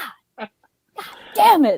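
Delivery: put-on angry, frustrated, exasperated burst of cursing. Retelling a moviegoer throwing popcorn at scenes: imitating someone getting mad. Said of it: "she was getting so mad".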